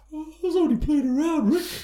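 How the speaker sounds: mild, harmless, very high-pitched voice. Imitating Terry Funk telling Rick he was only playing: soft Terry Funk voice. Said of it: "He's got this real soft".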